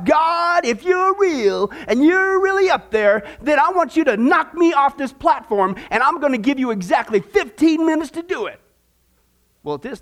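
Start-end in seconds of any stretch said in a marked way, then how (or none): 0.0-8.6 defiant, daring, bold, half-raised voice. Retelling a professor challenging god before a class: imitating someone shouting. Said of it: "he looks at the ceiling and he shouts".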